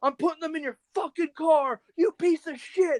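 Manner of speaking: shrill, screeching yell, very high-pitched. Retelling Drayton yelling at the speaker about their car, imitating Drayton yelling. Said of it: "And he's like yelling at me".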